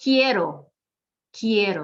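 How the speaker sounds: first syllable of quiero stressed. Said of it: "we're going to emphasize it".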